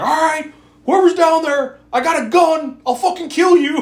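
shrill, very high, loud, threatening scream. Retelling how a man at the basement door started screaming, imitating a man screaming. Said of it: "he starts screaming".

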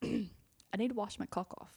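put-on British accent, said plainly. Retelling what a guy from London said after a wedding, in a British accent. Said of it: "said in a British accent".

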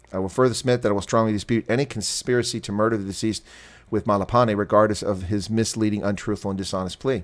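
plain

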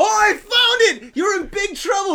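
mock, very high, shrill, loud frantic cry. Retelling confronting a guy with his wanted poster, mock freaking out. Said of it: "And I start freaking out".

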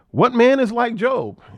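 high, wide, facetious, sarcastic mocking tone.

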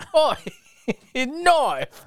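clumsy, bad Australian accent, very high. Quoting a scene from an 80s movie, in a bad australian accent. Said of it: "I don't know how to do the Australian accent".

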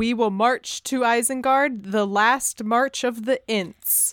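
normal talking voice

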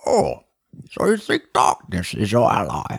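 big, swooping masked villain voice. In a movie-impression segment, doing a scene with a Bane impression. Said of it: "this is where [name] met Bane".

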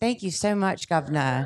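put-on British accent. Thanking the other speaker after being welcomed to the show: put-on british accent. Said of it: "we're pulling out British accents and stuff".

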